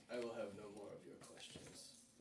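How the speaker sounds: breathy, whispered undead sorcerer voice. Voicing a lich who cuts off the players' questions. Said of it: "And he says".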